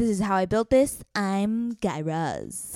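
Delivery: enthusiastic, eager podcast-host voice. Showing one of the two best podcast impressions to a co-speaker, a Guy Raz impression. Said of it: "these are the two best podcast impressions".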